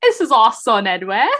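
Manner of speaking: put-on near-Australian accent. Speaking in a role, introducing someone, almost Australian accent. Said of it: "That was like almost Australian".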